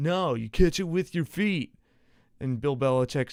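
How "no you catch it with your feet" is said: cynical, sarcastic, pitched-up mocking. Retelling a coach's reply about catching punts: imitating Bill Belichick sarcastically mocking.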